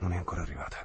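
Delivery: as if to oneself. A man looks out the window into the street, speaking as if to himself. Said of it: "disse come tra sé".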